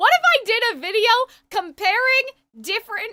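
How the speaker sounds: voice breaking mid-sentence, cracking up high. Speaker pitching a video idea to the audience, voice cracking. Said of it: "the voice crack".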